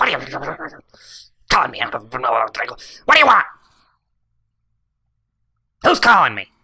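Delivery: slow, cranky, angry grumbling, rising in pitch. Game master voicing a creature that kicks open a door, angry muttering. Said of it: "very angrily muttering to himself".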